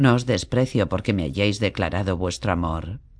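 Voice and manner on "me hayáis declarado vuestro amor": ordinary delivery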